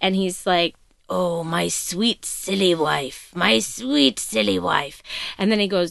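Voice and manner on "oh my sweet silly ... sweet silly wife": slow, creaky, rough, throaty, scheming voice. Retelling a tv scene where a man speaks to his wife, throaty put-on voice. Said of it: "he goes back into his throaty plan voice".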